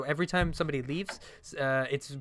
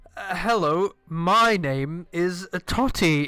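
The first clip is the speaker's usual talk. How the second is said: put-on loud, very slow, drunken drawl; 3 semitones higher, 7 dB louder than usual. Narrator voicing a drunk man who walks over to you, drunk Totty voice. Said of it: "in his drunk state".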